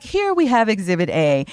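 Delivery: TV news anchor presenting delivery. Retelling a funny video's opening line: imitating a TV anchor voice. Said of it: "the T V anchor voice".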